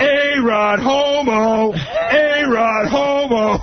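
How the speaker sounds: acted-out, really loud, very high, very slow shout. Retelling a ball game when Will yells out from the seats, imitating Will's loud yell. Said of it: "he starts yelling out really loud".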